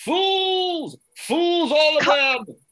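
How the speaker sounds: stark raving, very high, loud shouting rant. Actor character bursts out of the house at an imaginary audience: stark raving rant. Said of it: "stark raving at this imaginary audience".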